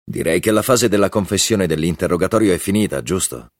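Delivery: ordinary delivery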